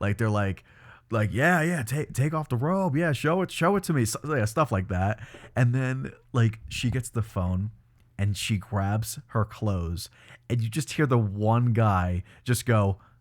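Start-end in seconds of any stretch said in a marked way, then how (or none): 1.3-4.0 high, juvenile, rowdy crowd heckling and yelling. Describing a show's audience reacting to a scene, imitating the audience yelling at the tv. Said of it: "yelling and like screaming at the T V".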